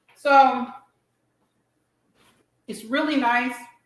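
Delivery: words mushed, talking through a full mouth. Tasting a sandwich on camera, talking with mouth full. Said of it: "Try not to eat with my mouth full".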